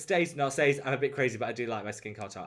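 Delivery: plain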